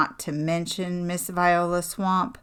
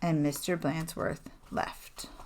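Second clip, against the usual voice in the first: ordinary delivery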